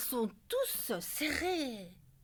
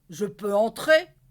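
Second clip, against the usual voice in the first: very loud, booming, gruff big giant voice; 2 semitones lower, 14 dB louder than usual. Reading a children's story aloud, voicing the giant bear in a big bear voice. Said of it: "dit de sa grosse voix".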